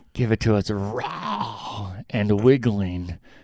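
gross, nasty, disgusting creature voice. Retelling a story, quoting Smeagol's line in a disgusting Smeagol voice. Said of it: "he says it so disgusting".

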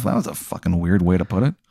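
quiet muttering under breath. Voicing a character who walks away after a talk: muttering to himself. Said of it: "you hear him mutter to himself".

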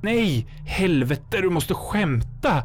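breathless gasp. Narrator voicing a character as a shape forms from the lightning, gasped. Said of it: "flämtade Robert".

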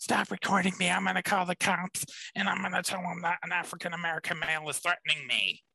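very high-pitched, shrill screaming. Retelling a woman confronting a man who is recording her, act out her screaming. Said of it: "basically screaming at him like".

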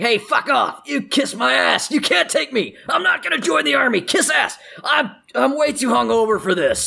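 very high, raspy, rough screaming rant. Voicing a half-orc dragged by a press gang: screaming in protest. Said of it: "he's kicking and screaming".

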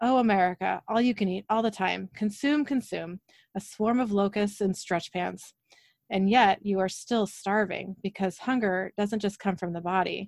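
usual speaking voice

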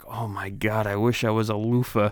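muttered under the breath, undertone. Quoting a movie character peeping through a telescope, retelling a mutter under breath. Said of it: "saying all this dumb shit under his breath".

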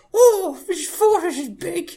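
put-on very high, slowed, drawn-out small-kid voice. Imitating a friend as a child walking along a fortress: imitating James as a child. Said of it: "As James voiced a child".

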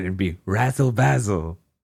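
put-on British accent. Explaining a pun for anyone in the audience: British accent. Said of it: "with a British accent".

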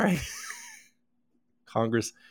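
very high, swooping put-on voice. Speaker references Adam a lot and now does his voice: Adam voice impression. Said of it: "now I'm doing his voice".

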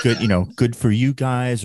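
ordinary talk, nothing marked

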